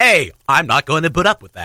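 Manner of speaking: mechanical robot voice. Imagining the setting of a robot parcel taker, the speaker demonstrates: robot voice. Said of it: "That was my robot voice".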